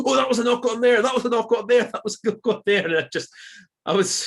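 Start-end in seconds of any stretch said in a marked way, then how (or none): 0.0-2.9 mock high, nagging, shrill, repeated shouting. Retelling how a man near the speaker kept shouting about a knock-on, imitating his shouting. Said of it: "He just kept shouting".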